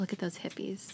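muttered under the breath. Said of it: "made a comment under their breath".

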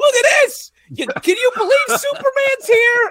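very high, very loud, thrilled excited yelling. Teasing a friend about movie behavior, imitating someone yelling at strangers. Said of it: "you're yelling at strangers like".

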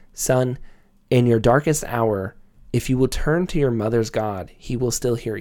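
ordinary talk

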